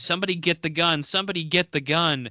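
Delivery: restrained, high, mild scream. Retelling a wrestling show's ending, imitating Lawler screaming. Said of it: "Lawler screams".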